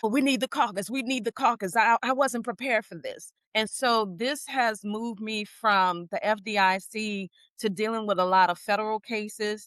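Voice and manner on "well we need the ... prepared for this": put-on agitated, frantic half-scream, mild yell. Retelling how a lawyer reacted in a hearing: imitating a lawyer screaming. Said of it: "he started screaming like".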